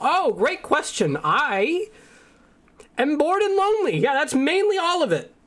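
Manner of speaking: very high-pitched character voice. Answering why the character follows the party: Ruggy Dug Duggy voice. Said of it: "It's me, your favorite, Ruggy Dug Duggy!".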